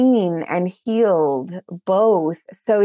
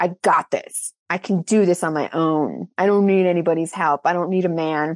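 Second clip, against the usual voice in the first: put-on deep, masculine tough-guy voice. Describing a past masculine shell, acting out that old self: put-on deepened masculine voice. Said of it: "you're like deepening your voice".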